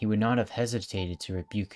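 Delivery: ordinary delivery, nothing marked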